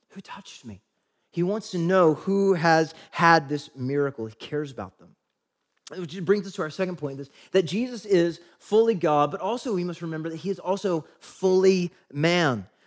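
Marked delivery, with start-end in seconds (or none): 0.1-0.8 tender, caring, very hushed near-whisper. Showing how a question was asked out of care: tender. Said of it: "Jesus tenderly saying".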